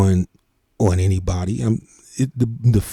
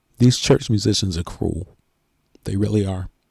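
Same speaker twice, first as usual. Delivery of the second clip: choked up, fighting tears, voice catching; 3 dB quieter than usual. Telling struggling church musicians that their peers are cruel, choked up. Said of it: "I'm getting choked up".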